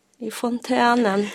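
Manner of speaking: soft, gentle, happy tone. Retelling a phone call home to her husband, retelling a soft, happy reply. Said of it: "Mjukt, så, glatt".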